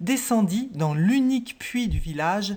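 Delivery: ordinary delivery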